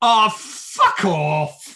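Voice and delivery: loud, high, uncontained outburst. Retelling an outburst in the cinema at the film's ending: retelling a loud outburst. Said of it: "louder than it should have and louder than was intended".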